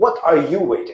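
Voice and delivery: aggressive, booming voice like thunder. Retelling the end, with few people left, when God speaks: God's aggressive thundering voice. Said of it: "God's voice comes out very aggressively, like a thunder".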